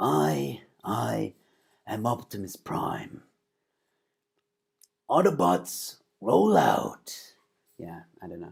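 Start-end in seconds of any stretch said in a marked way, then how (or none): 0.0-7.1 very slow, creaky, each word drawn out. Speaker attempts an old impression on the spot, doing an Optimus Prime impression. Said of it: "I used to actually do an Optimus Prime imp- impersonation".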